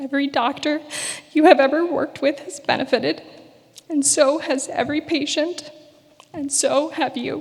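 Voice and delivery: high, tearful voice, crying. Addressing a listener directly, the speaker talks while crying.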